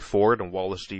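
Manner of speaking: ordinary delivery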